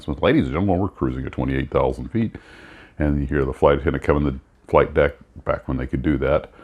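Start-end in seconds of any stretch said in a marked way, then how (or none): 0.2-2.4 captain's cabin announcement voice. Retelling an old coffee commercial: imitating a pilot's cabin announcement. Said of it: "the cap makes the announcement".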